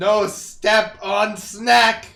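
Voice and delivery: very loud, slow, drawn-out monster bellow. Voicing an eldritch snake that rises from the ground: eldritch snake yelling. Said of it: "An eldritch snake comes out of the ground and yells".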